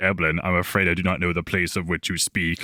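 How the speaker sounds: put-on German-accented voice. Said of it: "reading it like Kissinger".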